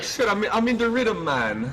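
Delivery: "oons" in put-on high Jamaican accent. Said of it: "That was, like, Jamaican".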